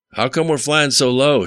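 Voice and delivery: loud high-pitched shout. Narrator reads a passenger's question in a low-flying helicopter, shouted. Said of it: "Shouted Rhino".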